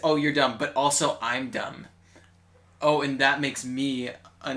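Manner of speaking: usual speaking voice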